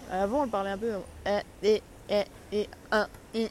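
robotic voice, pauses between each word. Showing how old GPS voices used to sound: old GPS robot voice, pausing between words. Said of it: "Je fais des pauses entre chaque mot".

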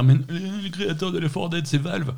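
high, annoying-guy voice. Voicing an imagined objection from an annoying guy: imitating an annoying guy's voice. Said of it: "tu fais la voix du mec qui t'emmerde".

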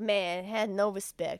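imitated Spanish accent. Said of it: "he's got a Spanish accent".

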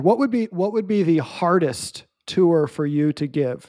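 ordinary talk

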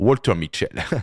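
spoken with an English accent. Introducing the scientist behind the marshmallow experiment, English accent on the name. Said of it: "avec l'accent anglais".

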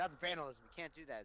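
ordinary delivery

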